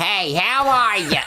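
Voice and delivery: very high, slow, drawn-out, ghoulish troll goblin queen voice. Describing a film performance on the telephone, doing a Bette Davis voice. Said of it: "just full Bette Davis".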